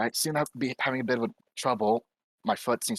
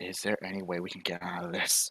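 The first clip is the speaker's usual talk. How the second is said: low, hushed half-whisper under the breath; 5 semitones lower, 5 dB quieter than usual. Player with a cannon pointed at them, half-whispering to Nova. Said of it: "whispering to like Nova".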